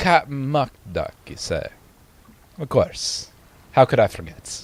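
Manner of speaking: amateur, attempted British accent. Playing a character who is greeting others in a group scene, attempted British accent. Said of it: "attempting to do a British accent".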